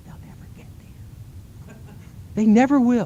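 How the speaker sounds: quick quiet whispering. Lecturing about education and sharing the trick with listeners: whispering.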